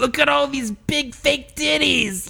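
very high, slow, creaky character voice. Asked to say the line, doing the Turtle voice. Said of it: "I do the Turtle voice".

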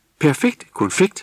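high-pitched shouted call, cry-like delivery. Vildnis cuts in after Jule asks for a bag of sweets, shouting. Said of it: "råbte Vildnis".

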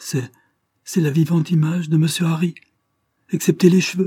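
stammering. The stunned steward, asked by Lord Dane if he recognizes him, stammering. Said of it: "bégaya le malheureux intendant".

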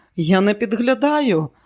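unsteady, wavering, trembling, quavering voice. A woman answers a pale man who accuses her of snooping, in a trembling voice. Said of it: "тремтячим голосом відповіла вона".

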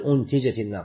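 ordinary delivery

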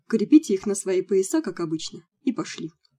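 ordinary delivery

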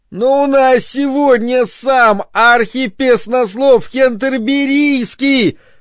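shouting, nearly crying. Bernard pleads with John, who shouts at him from behind a door: shouting, nearly crying. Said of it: "чуть не плача крикнул Бернард".

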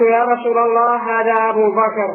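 normal talking voice

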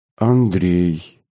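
dispirited voice, falling in pitch. A grandmother answers her grandson's question, in a sinking voice. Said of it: "упавшим голосом ответила она".

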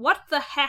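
put-on dead earnest, grown-up sincerity. Imitating how a character says "What the heck?": imitating a very earnest "heck". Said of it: "very earnestly".

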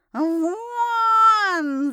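high, loud hissed yell, stretched long. Narrator reads a cat yelling at the narrator, hissing yell. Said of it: "зашипел кот, продолжая орать".

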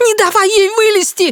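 shrill, very high screech. Narrator voicing a woman as they pry the lid open, shrieking. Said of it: "завизжала женщина".

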